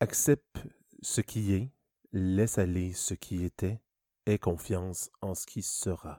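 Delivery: low, soft, smooth, suave, gentle voice. Reading aloud a quote written on a wall, in a slightly suave voice. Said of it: "je vais prendre une voix un peu suave".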